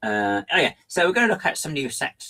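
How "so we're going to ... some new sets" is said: high, clumsy, poorly done put-on voice. Imitating how Greg would open the show: bad impression of Greg. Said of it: "that's my impression of Greg".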